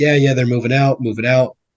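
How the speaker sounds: plain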